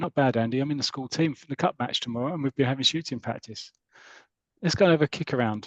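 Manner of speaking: plain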